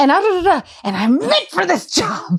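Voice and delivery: high, intense, overeager sing-song voice. The speaker imitates a woman applying to be a secretary: imitating a Tracy Flick-type applicant. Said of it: "She gave such Tracy Flick energy".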